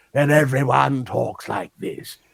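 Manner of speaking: slow, creaky, drawn-out olde England accent.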